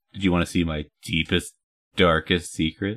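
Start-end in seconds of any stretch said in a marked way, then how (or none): none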